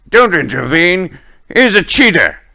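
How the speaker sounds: high, urgent shouting. Voicing a guard who warns the others off: guard shouting. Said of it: "one of them shouts".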